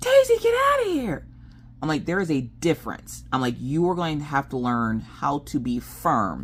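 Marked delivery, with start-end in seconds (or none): 0.0-1.3 very high, loud yelling. Contrasting being firm with yelling at daisy, yelled.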